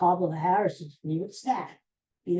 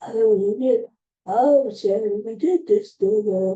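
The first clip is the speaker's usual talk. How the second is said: tired, very slow, loud, weary drawn-out voice; 4 semitones higher, 6 dB louder than usual. Mocking how a rival sounds at small rallies: imitating Donald Trump sounding old, tired. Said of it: "he sounds real, like".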